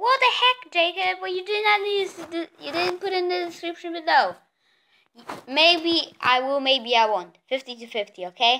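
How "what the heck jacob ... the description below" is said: mock indignant screaming, high and angry. Imitating viewers screaming about a missing link: imitating viewers screaming at him. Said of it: "do not shout at me and be screaming at me like".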